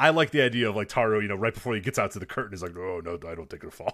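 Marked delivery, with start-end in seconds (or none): 2.8-3.9 very deep, very low, hushed, very quiet disgusting voice. Pitching a bit where Taro backs out right before the curtain, in Taro's disgusting voice. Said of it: "in his disgusting voice".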